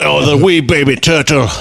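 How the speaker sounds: speaking with a Scottish accent. Trying out accents, landing on a Groundskeeper Willie voice. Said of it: "I can just do groundskeeper Willie".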